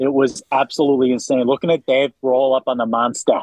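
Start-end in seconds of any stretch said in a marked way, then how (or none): 1.4-3.4 bad put-on Boston accent, sounding like New York. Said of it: "That's a New York accent".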